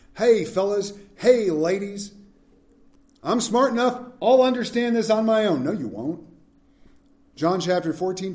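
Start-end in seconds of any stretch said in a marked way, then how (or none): 0.2-5.7 put-on old-timer Southern accent. Acting out a proud person who trusts their own smarts: put-on Southern accent. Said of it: "old there for an old and Southern".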